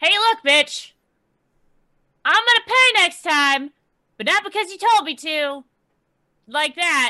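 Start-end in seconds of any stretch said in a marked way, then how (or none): 0.0-5.6 shouting, higher and louder. Voicing a character yelling down from a high, safe spot: yelling down. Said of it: "she's going to start yelling down".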